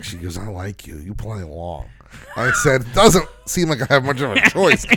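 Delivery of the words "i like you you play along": put-on low, rasping, raspy elderly woman's voice. Speaker acts out an elderly woman who smokes, telling him she likes him, in a raspy voice. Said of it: "real raspy voice".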